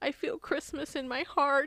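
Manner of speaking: put-on verklempt, high, near-tears little kid voice. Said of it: "get all, like, verklempt".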